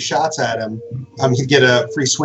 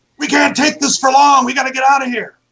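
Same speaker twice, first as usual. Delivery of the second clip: very high-pitched yelling shout; 13 semitones higher, 3 dB louder than usual. Narrator voicing Bjorn, who yells down to Jolly, Bjorn yelling down. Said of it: "Bjorn yells down at you".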